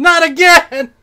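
very high-pitched, loud screaming cry. Reading out a line that another person screams, screaming. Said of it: "Jason Dedmen screams".

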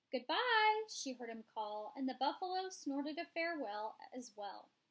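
plain reading voice

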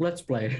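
low, muttered under the breath to oneself. Playing a character who mutters to Riley before the game: muttering under breath. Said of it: "I just under my breath".

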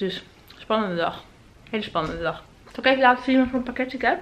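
talking with mouth full of food. Vlogger talking to viewers before opening packages, talking with mouth full. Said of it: "Sorry trouwens dat ik met mijn mond vol eet".

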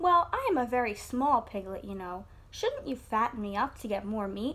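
ordinary talk

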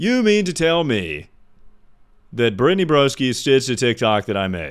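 dripping, swooping, sing-song sarcasm with feigned surprise. Reacting to a chat message about a stitched TikTok: sarcastic. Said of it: "I'm being sarcastic".

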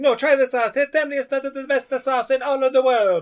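very high, put-on video-game Italian accent. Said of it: "his name should be Mario Mario".

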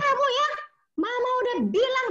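high, loud, shrill, snappy scolding.

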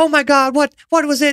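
frantic, panicked, very high-pitched outburst. Retelling the sister's reaction to a voice behind them: imitating someone freaking out. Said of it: "freaks out".

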